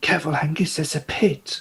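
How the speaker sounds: barely above a whisper, hushed. Voicing Gully warning a companion about a pit: almost whispering. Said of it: "Gully's going to sort of almost whisper".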